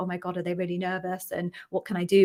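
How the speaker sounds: ordinary talk, nothing marked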